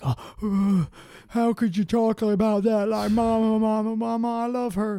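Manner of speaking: put-on very high, doting mama's boy voice. Retelling how Teddy defended his mother: imitating Teddy as a mama's boy. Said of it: "I don't think he talked like that".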